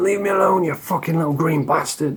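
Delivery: play-acted, unhinged ranting and screaming. Retelling how a man screamed all night at imagined little green men, imitating someone screaming. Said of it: "he was screaming about little green men".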